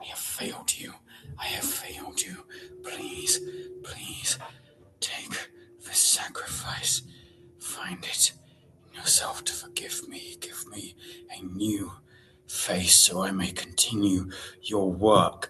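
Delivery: murmured, whispered, mumbling undertone under the breath. Voicing a kneeling figure praying to a master: whispering and mumbling. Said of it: "you can hear them whispering and mumbling".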